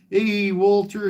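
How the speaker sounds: put-on Southwest accent, pitched very high. Recalling a friend who'd come up to his window to greet him: imitating a Southwest accent. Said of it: "He had that that that that uh, uh, uh, Southwest accent".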